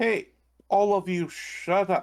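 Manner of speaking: stern, angry tone. Acting out Komarov shouting at the group: Komarov, firm angry voice. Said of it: "start like in a firm, angry voice".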